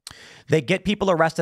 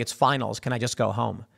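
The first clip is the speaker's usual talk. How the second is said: lower, softer mild mock yell in a woman's voice. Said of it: "some woman yelling".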